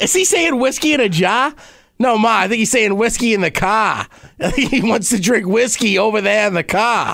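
put-on Massachusetts-style accent. Answering Ma's question, in a Massachusetts accent. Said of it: "What about Massachusetts?".

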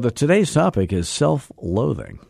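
smooth public-radio announcer delivery. Announcing the podcast's topic as if on NPR: NPR announcer voice. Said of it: "I said that as if I was on NPR".

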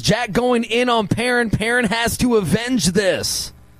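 ordinary talk

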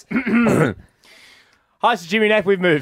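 rattled off in one breath. Re-recording an intro they already recorded once at length: said very quickly. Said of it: "the reason I've said that so quickly".

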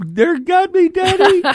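put-on very high, drawn-out child's scream. Retelling kids calling out to their father about mosquitoes: imitating kids screaming. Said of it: "You hear the kids screaming".

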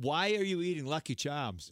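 ordinary talk, nothing marked

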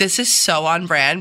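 ordinary talk, nothing marked

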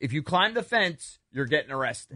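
normal talking voice

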